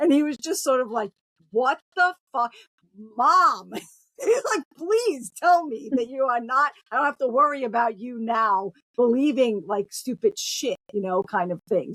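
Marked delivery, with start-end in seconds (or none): 1.5-3.7 acted shock and appall, louder. A mother retells her son's reaction to her, imitating a shocked, appalled son. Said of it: "look of both shock and appall and slight terror".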